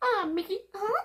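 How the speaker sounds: put-on cartoon voice, pitched way up. Showing a line that comes easily when doing Minnie, in Minnie Mouse voice. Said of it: "like when I'm doing Minnie, I can do the um".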